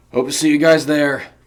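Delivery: very loud, rough, gravelly call. Reading a character's line to passing students about the flyers, in a gravelly voice. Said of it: "he said with a gravelly voice".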